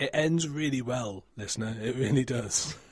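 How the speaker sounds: heavy, dripping, thick sarcasm. Describing how a book series ends, speaking to the listener: dripping sarcasm. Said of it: "Can you feel the sarcasm dripping?".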